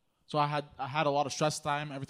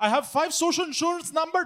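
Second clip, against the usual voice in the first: high, loud, fake Indian accent. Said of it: "I speak to them with an Indian accent".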